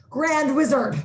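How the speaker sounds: shouting. Arguing about a church set on fire, blurting out the answer, shouting. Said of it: "What are you shouting?".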